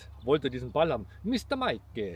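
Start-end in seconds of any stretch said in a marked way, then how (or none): 1.2-2.2 put-on Italian-accented speech. Retelling how a man asked for a Mr. Mike ball, Italian accent. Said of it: "so nett mit diesem italienischen Akzent".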